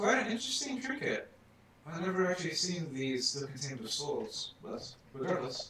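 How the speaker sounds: smug, amused, superior voice with swooping pitch. Picking up a trinket and looking at it, he speaks: smirking. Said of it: "and the man is looking at this and he's and he's smirking and says".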